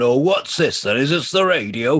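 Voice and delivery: put-on slow, wandering old man voice. Retelling what an old guy asked at the market hall: imitating an old guy. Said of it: "an old guy going".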